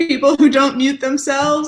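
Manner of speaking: high, loud delivery through laughter.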